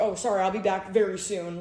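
ordinary delivery

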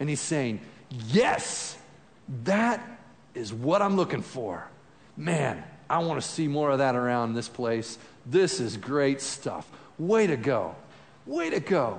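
mock praise tone with real joy. Speaker asks listeners to imagine Jesus speaking to them, voicing Jesus with put-on joy. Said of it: "there's some joy in his voice".

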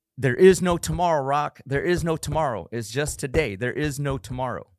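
high, in-your-face tough-love trainer screaming. Retelling a movie scene where a coach yells at a boxer: imitating Apollo Creed screaming. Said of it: "he's just screaming at him".

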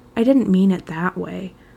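ordinary delivery

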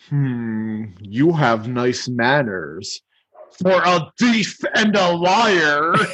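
dragon voice with a long drawn-out "you". Performing a quoted exchange, replying to the thief, in a Smaug impression. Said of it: "You're doing awesome with these impressions here".

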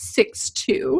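put-on smugness. Recapping a book scene, acting out Jake answering Bella, imitating a smug reply.

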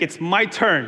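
firm, said with full conviction. Showing listeners how to say the line back: like you mean it. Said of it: "say it like, like you mean it".

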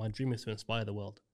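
ordinary delivery

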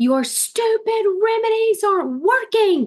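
very high, shrieking, angry, accusing scream. Retelling how a kid pointed at them and screamed, acting out the scream. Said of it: "he pointed at me and screamed".

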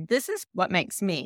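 ordinary delivery

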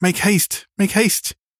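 very high, urgent cry. Opening the door to the little girl, he cries out to her, hurried. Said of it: "he cried in a hurried voice".

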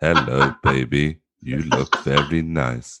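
monotonous, robotic voice. Joking about doing a sexy voice, the speaker turns into a robot: robot voice. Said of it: "turn into a robot".

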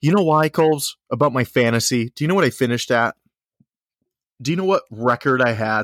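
low, intimate, close-to-the-mic voice. Leaning into the microphone to question Coles: lowered, more intimate tone. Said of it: "Let me lower my tone".

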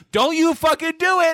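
acted yelling. Acting out a mall crowd yelling at a man: retelling a crowd's yell. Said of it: "they're just yelling at this man".

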